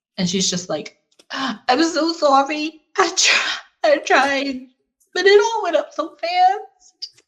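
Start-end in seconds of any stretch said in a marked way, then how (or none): 1.3-7.1 very high, tearful, sniffling sobbing voice. Voicing a character found crying in a safe house: mock crying. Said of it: "She is crying her eyes out".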